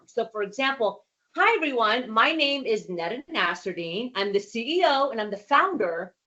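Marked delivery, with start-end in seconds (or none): 1.4-6.1 pitch rising and falling throughout. Example self-introduction in a speaking exercise, pitch going up and down. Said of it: "you see how I had a little bit of up and down in my vocal dynamic?".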